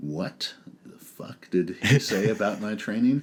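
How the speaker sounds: put-on livid, disbelieving, indignant outburst. Retelling own reaction to hearing criticism of training: imitating own furious reply. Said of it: "I was so fucking pissed".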